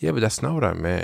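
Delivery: even, unbothered, low-energy put-on calm. Retelling arguments with her, imitating own low-energy reply. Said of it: "it would be like this, on this tone".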